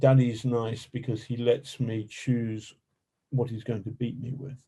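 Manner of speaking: ordinary talk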